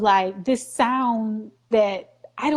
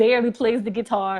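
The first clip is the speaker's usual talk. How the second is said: plain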